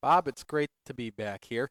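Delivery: flat, robotic and insincere delivery. Returning guest answering the host's welcome back, robotic and insincere. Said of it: "Sound like a robot".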